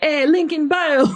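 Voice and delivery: put-on Jamaican accent, high and slow. Retelling a dream about an influencer sleep paralysis demon: put-on Jamaican accent. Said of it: "an influencer with a Jamaican accent that kept saying".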